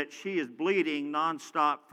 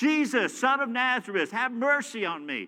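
acted-out, high, desperate shout at the top of the lungs; 8 semitones higher than usual. Retelling how a blind man by the street cried out, retelling a blind man's shout. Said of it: "he's just shouting out".

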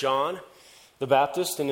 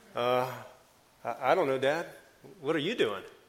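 mock-guilty caught child voice, much quieter; 3 semitones lower, 5 dB quieter than usual. Acting out a kid caught in the cookie jar answering his dad, playing a guilty kid caught. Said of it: "a kid with his hand in the cookie jar".

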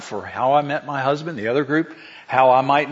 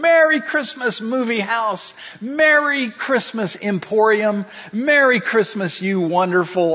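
put-on pitched-up yell at the top of lungs; 8 semitones higher than usual. Retelling a film scene of running through a town: imitating George Bailey yelling. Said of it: "yelling at the top of his voice".

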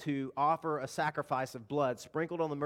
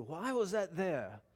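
raspy, rasped-out professor voice; 3 semitones higher, 5 dB quieter than usual. Imitating a Hebrew professor asking a question: raspy Richard Harris voice. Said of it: "he had this raspy Richard Harris voice".

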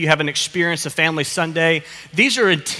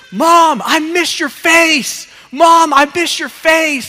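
put-on very high, very slow, loud child's yell; 11 semitones higher, 7 dB louder than usual. Retelling a kid on the beach running to his mom: imitating a kid yelling. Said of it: "And he's yelling".

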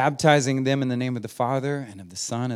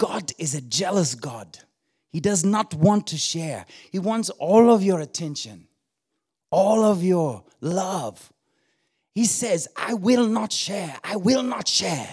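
put-on higher-pitched Kenyan accent; 6 semitones higher than usual. Quoting a preacher's sermon words from memory, in a Kenyan accent. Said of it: "He said in that Kenyan accent".

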